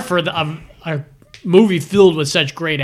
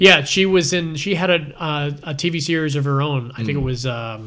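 plain

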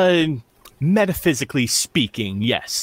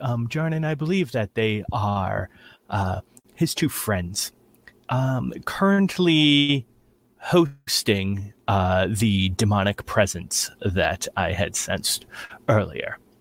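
whisper, lower pitch; 8 semitones lower, 4 dB quieter than usual. A player character leans on jarnan's shoulder and speaks, whispering into his ear. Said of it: "I'll whisper into his ear".

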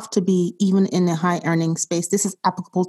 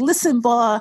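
imitated yelling voice, pitched higher; 4 semitones higher than usual. Retelling an audiobook author yelling at the listener: imitating Grant Cardone yelling. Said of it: "it's almost like he's like".

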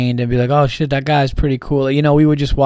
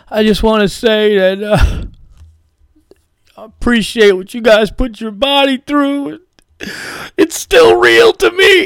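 mock very high, freaked-out, emotional gushing fan voice; 9 semitones higher, 3 dB louder than usual. Doing a verbatim impression of what a man said to them, imitating an emotional fan. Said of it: "And he just fucking freaked out".

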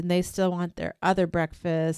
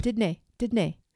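attempted Scottish accent; 3 semitones higher than usual. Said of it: "that was supposed to be my Scottish".

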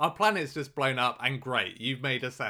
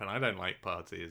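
put-on deadpan, lower and quieter; 6 semitones lower, 5 dB quieter than usual. Recapping a scene, quoting a character's line: mock deadpan. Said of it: "Wheelie's just deadpan".

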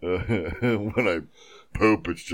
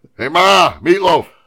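put-on comedic yelling voice, higher and louder; 12 semitones higher, 14 dB louder than usual. Joking about being hungry, imitating Will Ferrell yelling. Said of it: "I was doing Will Ferrell from Wedding Crashers".

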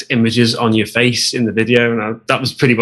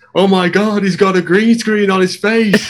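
acted-out shouting, pitched up; 9 semitones higher than usual. Retelling what a passing jogger shouted: imitating a man shouting. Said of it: "the guy just shouts".

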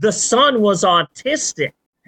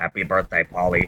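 put-on creepy, eerie, robotic mechanical male voice; 5 dB quieter than usual. Retelling a robot's birthday greeting from Rocky Four: imitating a creepy robotic male voice. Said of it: "it's a creepy robotic male voice".

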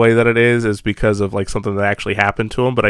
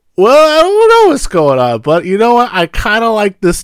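play-acted very high, loud, tipsy, sozzled drunk voice; 12 semitones higher, 7 dB louder than usual. Speaker describing the short movies someone keeps showing: imitating a drunk person. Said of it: "some drunk person just going".

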